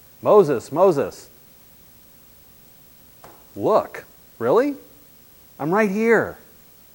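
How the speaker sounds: very loud, haughty, swooping sarcasm. Interpreting a line from the Hebrew Bible, sarcastic, arrogant tone. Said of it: "with a very kind of sarcastic, arrogant tone".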